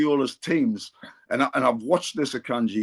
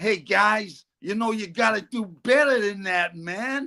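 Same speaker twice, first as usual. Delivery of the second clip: put-on American accent, pitched up; 7 semitones higher, 4 dB quieter than usual. Retelling what a man said, in his american accent. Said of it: "he had an American accent".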